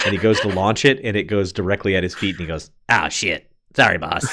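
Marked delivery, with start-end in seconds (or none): 2.9-4.2 tiny, little fairy-creature sprite voice. Voicing a tiny winged sprite greeting the player: little sprite voice. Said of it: "This is like tiny Beetlejuice".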